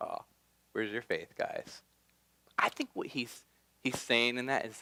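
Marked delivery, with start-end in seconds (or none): 0.0-1.8 amused, knowing, breathy, teasing half-whisper. Acting out Jesus asking the disciples, with a smirk: imitating Jesus with a smirk. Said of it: "he kinda just had this smirk on his face".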